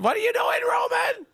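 very high, shouted yell.

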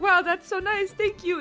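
tearful, crying, touched character voice. Voicing a touched character thanked for a gift: character crying, touched. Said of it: "you can definitely tell that he's, like, crying".

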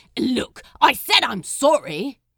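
sharp, very loud defensive snap. Crowley answers Aziraphale after knocking over his tree, snapped defensively. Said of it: "he snapped defensively".

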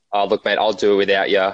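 ordinary delivery

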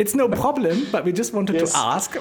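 put-on English spoken with a German accent. Retelling a conversation about an appointment time, German-English accent. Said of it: "in unserem besten ähm, deutsch-englischen Akzenten".

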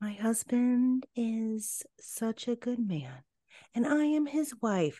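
put-on soft, high, meek, submissive baby voice. Mocking how a woman talks about her husband, mock submissive high baby voice. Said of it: "It's that fucking high-pitched, submissive, semi-baby voice".

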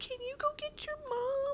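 very high, hushed, soft little squeak. Recounting a bad experience, quoting what they asked back then: retelling a tiny squeaky voice. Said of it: "I squeaked out in this very tiny voice".

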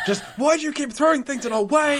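mock very high-pitched, loud screaming shout. Retelling a preacher's showdown against god in a film: imitating shouting at god. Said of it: "just shouting and screaming at God".

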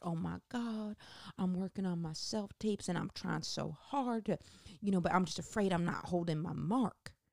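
sweet, excited, gushing voice. Retelling meeting a woman who is in SAG: impersonating a woman she met. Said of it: "I'm doing an impersonation".

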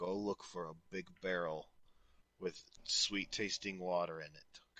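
low, hushed, secretive half-whispered aside. In a role-play game, a player's character speaks to another character, half-whispering. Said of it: "I'm going to whisper to him".

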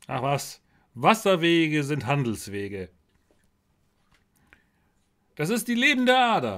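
put-on vain, pompous, conceited Viennese-accented voice. In a role-play, answering another character's worry; vain Viennese master builder voice. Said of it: "wäre nur dieser komische eitle Baumeister aus Wien nicht".

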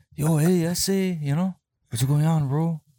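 loud, put-on Mexican character accent. Asking when it became offensive to talk like this: put-on mexican accent. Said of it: "to not be able to talk like this".

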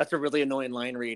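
ordinary talk

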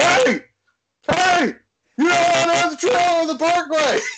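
long, high-pitched yell. Retelling a driver who pulled up beside them, imitating him yelling. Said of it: "He's like yelling to us".

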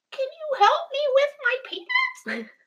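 put-on very high little kid voice. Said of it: "And he says again".

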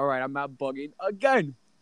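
plain

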